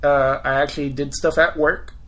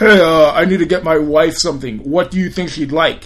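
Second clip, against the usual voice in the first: loud put-on manly voice; 6 dB louder than usual. Retelling what a customer's husband would say, in a put-on man voice. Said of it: "this is my man voice".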